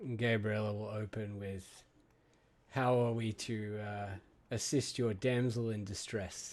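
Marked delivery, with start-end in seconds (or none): 2.7-6.5 patronizing, snide, sarcastic and condescending tone. Voicing Sister Gabriella's opening line to the group, condescending. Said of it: "in the most condescending way she".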